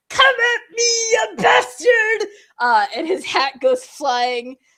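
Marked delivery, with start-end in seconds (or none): 0.2-2.3 very high, shrill, hysterical yell. Narrating a storm scene, the speaker voices the captain as a shouting captain. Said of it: "he just shouts out".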